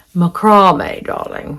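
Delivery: put-on upper-class English posh accent. Demonstrating how to make the word sound posh, say it in a posh accent. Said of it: "I can make it sound posh".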